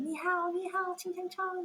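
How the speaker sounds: put-on taunting screams. Retelling two guys circling the friends on bikes, retelling mocking screaming. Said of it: "they were just like screaming like".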